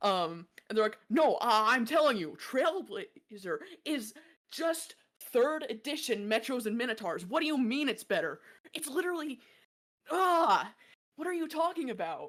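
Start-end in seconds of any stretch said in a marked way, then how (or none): 1.1-12.3 put-on heated, arguing young voice. Voicing gamers overheard in a store side area: young adults arguing. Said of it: "they sound like young adults".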